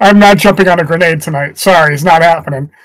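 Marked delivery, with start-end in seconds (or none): none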